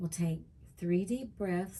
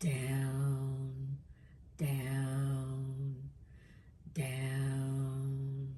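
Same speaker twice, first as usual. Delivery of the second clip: deeper voice, much lower pitch; 6 semitones lower than usual. Leading a breathing exercise into alpha, saying down in a deeper voice. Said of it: "saying down, down, down in a deeper voice".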